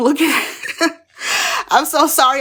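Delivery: very slow, laughing speech. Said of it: "I don't mean to laugh".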